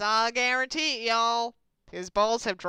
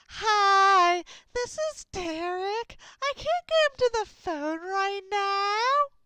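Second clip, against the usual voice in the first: put-on very high-pitched, drawn-out old voice; 10 semitones higher than usual. Acting out your brother's old voicemail message, imitating Derek's old high-pitched voice. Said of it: "in his old high pitched voice".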